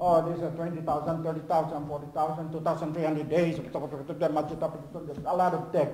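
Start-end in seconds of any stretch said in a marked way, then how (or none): 0.0-3.6 auctioneer-style rapid calling patter. Imitating a shark evangelist's pitch to relatives, auctioneer-style rapid patter. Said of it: "Sounds like an auctioneer".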